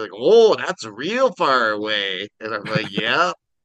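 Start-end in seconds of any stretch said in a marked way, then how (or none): 0.1-2.3 put-on Minnesota accent. Quoting the liquor store guy replying to the speaker, in a Minnesotan accent. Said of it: "The guy at the liquor store talked like that".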